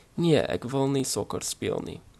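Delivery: ordinary delivery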